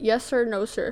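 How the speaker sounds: ordinary delivery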